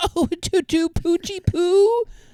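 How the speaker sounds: put-on cooing baby talk, very high and very slow. Showing how people approach a cat, cooing animal voice. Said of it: "any type of animal voice".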